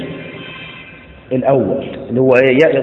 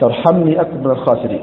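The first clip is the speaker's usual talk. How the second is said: plain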